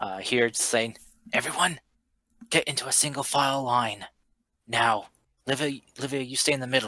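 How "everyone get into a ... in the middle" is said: urgent put-on half-whisper. Voicing a character warning the party of a follower: half-whispering in character. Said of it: "just kinda whisper to everyone".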